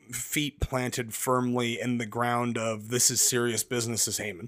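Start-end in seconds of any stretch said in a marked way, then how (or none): none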